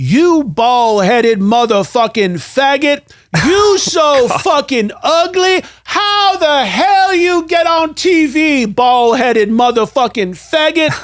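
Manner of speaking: put-on very high, slow, angry Texas accent, woman's voice. Retelling a viewer voicemail received at the newsroom desk, imitating an angry Texas woman. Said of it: "Angry Texas woman".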